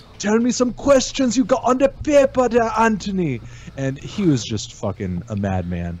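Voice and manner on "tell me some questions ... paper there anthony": bad fake Jamaican accent, very high. Retelling how a guest answered in an interview: imitating a bad Jamaican accent. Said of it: "goes straight bad Jamaican accent".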